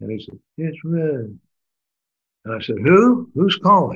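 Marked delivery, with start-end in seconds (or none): 0.6-1.4 put-on soft-spoken voice, higher pitch. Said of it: "he speaks in a soft tone".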